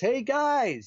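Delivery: mock, high-pitched screaming at the top of the lungs. Retelling calling out to the guys outside who couldn't hear, retelling a full-lung scream. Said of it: "screaming at the top of my lungs".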